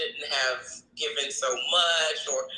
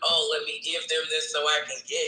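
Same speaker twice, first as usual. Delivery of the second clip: normal talking voice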